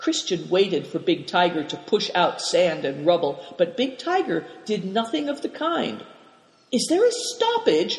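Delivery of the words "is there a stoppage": very high-pitched, startled, alarmed crying out.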